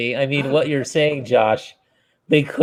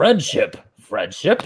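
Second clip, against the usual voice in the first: fighting-game announcer voice, video game style. Describing a favorite moment in the game, imitating the game announcer. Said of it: "you hear the announcer guy and he's like".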